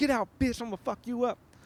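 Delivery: put-on enraged yell, very high-pitched and furious. Retelling own reaction after kicking the car: imitating own furious shout. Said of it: "I got real mad".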